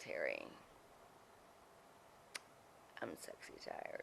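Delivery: put-on quiet voice. Retelling what someone said during makeup: imitating someone speaking quietly. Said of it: "That's why I said it quietly".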